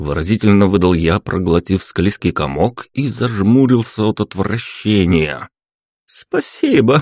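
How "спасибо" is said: high, mocking, derisive, teasing tone. A girl replying to the narrator, mocking. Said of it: "насмешливо ответила девушка".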